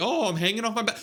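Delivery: show-off voice, acting cool, look-at-me bravado. Mocking someone who tried to look cool on a balcony: mock show-off voice. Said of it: "why are you trying to look cool on your balcony?".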